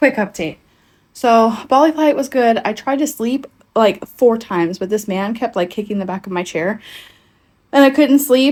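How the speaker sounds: breathless, winded, out-of-breath talking. A vlogger gives a quick update after the Bali flight, out of breath. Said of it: "I am winded and out of breath".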